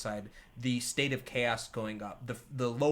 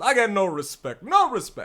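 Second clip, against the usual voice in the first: very loud, pitched-up, swooping comic bellow; 8 semitones higher, 8 dB louder than usual. Voicing a man on fire coming out: Rodney Dangerfield voice. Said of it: "looks real Rodney Dangerfield".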